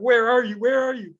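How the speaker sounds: put-on scream. Telling a story, acting out someone on the phone screaming at ambulance people. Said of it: "Like just screaming".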